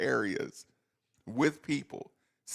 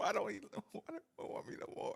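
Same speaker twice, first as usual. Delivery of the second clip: put-on tearful pleading voice, higher and quieter; 7 semitones higher, 10 dB quieter than usual. Acting out another person as Will Smith in the emotional scene. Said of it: "[name] is Will Smith in the emotional scene".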